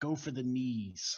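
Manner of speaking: slow, close half-whisper. A player describes motioning Volo over to give him guidance, half-whispering. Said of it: "kind of whisper in his ears like".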